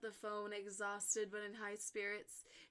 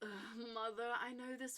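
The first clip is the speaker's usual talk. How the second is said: groaning voice. Reading a story, voice Caitlin answering her mother, groaning. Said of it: "Caitlin groaned".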